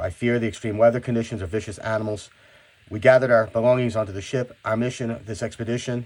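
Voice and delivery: plain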